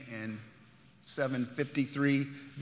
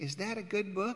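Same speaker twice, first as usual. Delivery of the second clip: small, sweet, pitched-up little voice; 6 semitones higher, 4 dB quieter than usual. Retelling what the woman sitting next to them asked while they read; sweet little voice. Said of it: "I hear this sweet little voice".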